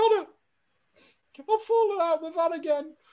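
put-on tearful voice. Retelling a phone call to someone on a night out: imitating own teary voice. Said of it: "I sounded very teary".

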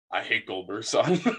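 low, grave, utterly dead-serious delivery. Recalling a talk about Goldberg's son, he quotes the reply in a dead-serious tone. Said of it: "In like the most serious tone".

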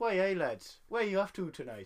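attempted Geordie accent. After admitting Geordie is beyond them, the speaker tries it anyway: attempted Geordie accent. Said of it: "I don't think I can do a Geordie accent".

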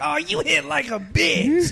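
mock taunting stoner voice, slow and creaky.

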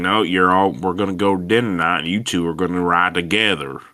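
thick Southern drawl, Texas style. Retelling what the head of NASCAR told the two of them, in a big Texas Southern drawl. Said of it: "his big Texas Southern drawl is like".

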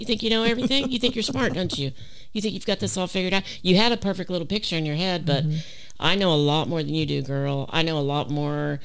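fast, put-on, needling, sarcastic taunting tone. Recounting what God said to her at the end, retelling sarcastic remarks. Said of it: "God is kind of sarcastic like I am".

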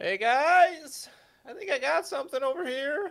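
loud, high calling out. Calling the others over after finding a keyhole: shouting. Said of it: "the sound of [name] shouting".

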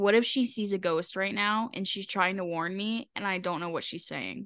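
ordinary delivery

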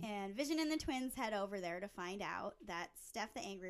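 normal talking voice

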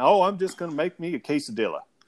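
offhand, casual delivery in put-on Southern accent. Speaker shows how they answer when asked about dinner, with a southern accent. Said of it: "So I even throw a Southern accent on it".

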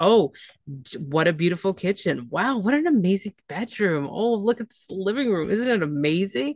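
mocking false enthusiasm, thick sarcasm. Retelling how he acted during the apartment tour, mock-sarcastic. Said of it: "he was being very sarcastic through the whole tour".

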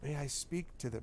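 soft, quavering, trembling voice. A woman character stands and asks permission to speak: trembling voice. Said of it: "stands and says in a kind of trembling voice".

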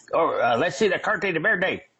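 put-on Texas drawl. Retelling being pulled over by Border Patrol agents, imitating a Texas accent. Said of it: "They all had Texas accents".

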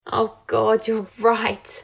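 slow, tearful laugh while speaking. Hermione answers him, laughing through her tears. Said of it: "Hermione started laughing through her tears".

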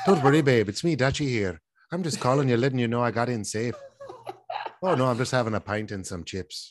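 imitated Irish accent. After the other speaker praises the accent, speaker voices Dutchie in an Irish accent. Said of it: "Why is your Irish accent better than mine?".

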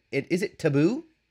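put-on Minnesotan accent. Teasing another speaker about how they said taboo: imitating a weird Minnesotan accent. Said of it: "rushed through it with a weird Minnesotan accent".

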